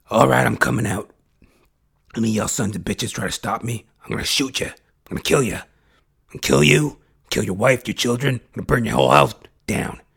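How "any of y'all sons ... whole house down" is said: put-on gruff cowboy voice. Threatening anyone who tries to stop them: Clint Eastwood voice. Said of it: "Clint Eastwood".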